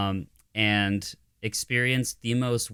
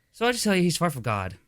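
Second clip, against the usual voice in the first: put-on higher-pitched voice of a middle school kid; 8 semitones higher than usual. Retelling what a student said at lunch, imitating Bobby's voice. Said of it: "He had Bobby's voice".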